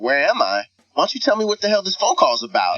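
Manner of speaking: put-on angry, combative tone, rising. Retelling a phone call with a caller, acting out his own reply: retelling own angry retort. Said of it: "I started going at him".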